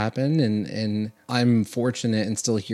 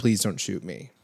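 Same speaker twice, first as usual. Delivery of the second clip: put-on begging, mock pleading, faster; 2 semitones lower, 3 dB quieter than usual. Imagining being found on the knees by people barging in, acting out begging.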